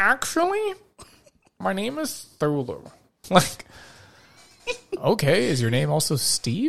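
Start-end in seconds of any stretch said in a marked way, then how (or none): 0.0-2.9 soft, high, swooping nerd voice. Speaker imagines meeting an ancient sea god who corrects his name: Cthulhu as a Poindexter nerd. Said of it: "sounds like some Poindexter nerd".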